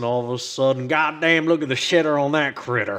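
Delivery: put-on southern twang. Joking about picking up a southern twang: put-on southern twang. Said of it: "southern twang going".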